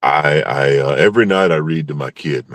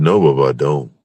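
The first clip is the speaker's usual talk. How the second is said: normal talking voice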